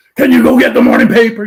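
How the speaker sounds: nasty, mean voice, high and loud. Showing how his wife asks in the morning; imitating his wife as mean neighbor. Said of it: "I was trying to imitate my wife as the mean neighbor".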